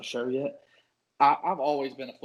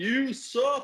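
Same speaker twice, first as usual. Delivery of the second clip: mock very high, jeering yell; 12 semitones higher than usual. Recalling a loud game, the speaker imitates Viper yelling. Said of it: "kept yelling".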